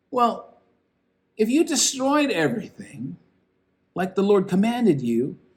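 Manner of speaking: acted, sarcastic, incredulous tone with swooping pitch. Quoting a man's reply to someone claiming to have obeyed the Lord; acting out a sarcastic reply. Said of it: "you can kind of hear the sarcasm".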